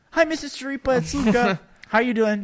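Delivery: very high, overly mature, polite grown-up voice. Recalling childhood phone calls to a friend's mother, pretending to be a very mature kid. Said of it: "Pretending like, you know, I'm like right a very mature kid".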